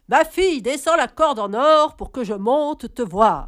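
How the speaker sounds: very loud, booming, big devil's voice. Narrator reads the devil calling up the tree to the girl, in his big voice. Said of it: "c'est de sa grosse voix qu'il appelle".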